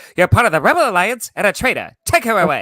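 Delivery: shrill, very high, loud, swooping voice. Speaker describes hearing the actor's real voice in the suit: David Prowse impression. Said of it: "it's literally him just like".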